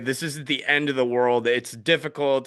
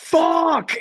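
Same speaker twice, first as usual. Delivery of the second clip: shrill, very high, loud screamed words; 5 dB louder than usual. Retelling botching something on stage while filmed: imitating own scream. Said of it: "screaming at my drum kit".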